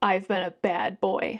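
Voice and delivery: low, slow, wicked tone, voice sunk in pitch. Reading a novel's line where a man presses her to the wall: voice lowered to a wicked pitch. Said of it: "his voice lowering to a wicked pitch".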